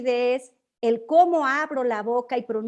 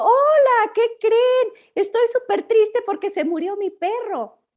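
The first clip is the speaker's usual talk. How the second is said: higher-pitched, louder and slower delivery; 10 semitones higher, 5 dB louder than usual. Giving an example of a voice contradicting its message, in a mismatched tone. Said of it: "ejemplo de cuando decimos algo en sentido contrario".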